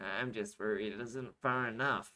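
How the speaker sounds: plain reading voice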